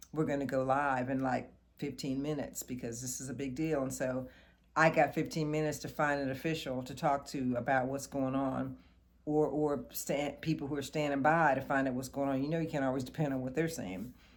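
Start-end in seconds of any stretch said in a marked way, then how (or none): none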